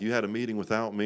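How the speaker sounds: fast, frantic, completely out-of-control outburst. Speaker retells the case manager's call about a meeting, retelling losing one's mind. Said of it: "And I lose my mind".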